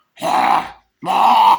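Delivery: loud, rasping, possessed demon creature shrieks.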